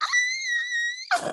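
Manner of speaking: high-pitched scream.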